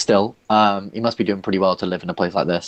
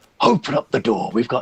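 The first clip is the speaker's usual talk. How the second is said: authoritative, commanding voice, as if over a speaker; 3 semitones higher than usual. Retelling how the listener shouts through the door, booming monitor voice. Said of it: "boom out in your monitor voice".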